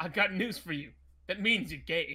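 very loud, aggressive delivery full of gusto. Retelling a Law and Order clip: imitating the line with aggressive gusto. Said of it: "he said it with such gusto and aggressiveness".

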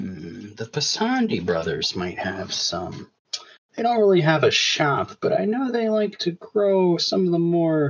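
high, sing-song wizard character voice. A wizard shopkeeper answers a player asking where to buy tobacco, wizard shopkeeper voice. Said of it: "I'm [name]. I'm the wizard shopkeep".

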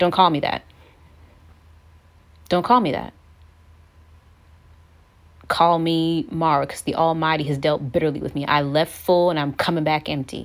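snappish, sharp, snappy delivery. Acting out Naomi's reply on her return: imitating a snappy reply. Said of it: "Naomi probably being a little bit snappy".

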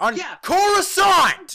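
shouting excitedly. Summarizing a movie plot to another speaker: yelling excitedly. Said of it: "I need to stop yelling".

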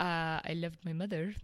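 very fake, heavy French accent. Retelling a man's reply to a woman's question: very fake heavy french accent. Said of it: "With this very fake French heavy accent".

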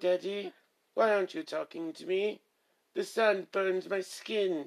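bad put-on English accent. Before welcoming listeners to the horror show, the speaker does a bit in a bad english accent. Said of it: "which is why I was doing my English accent".

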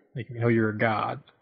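ordinary talk

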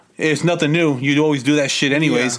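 ordinary delivery

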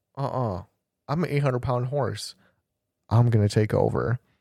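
ordinary talk, nothing marked

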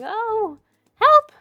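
quivering, fearful voice. Game narrator voices a woman backing away from three kobolds, quivering in fear. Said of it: "quivering in fear and is going".

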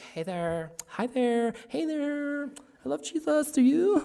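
super flirty, very high-pitched, very slow and drawn out. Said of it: "super flirty".

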